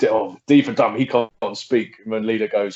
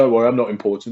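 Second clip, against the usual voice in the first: ordinary talk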